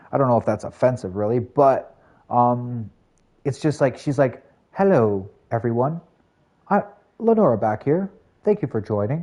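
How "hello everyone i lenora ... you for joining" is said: calm, soothing, easy voice at moderate volume. Imitating Lenora greeting everyone: calm monotone voice. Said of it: "I call her the librarian".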